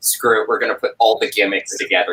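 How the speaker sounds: ordinary delivery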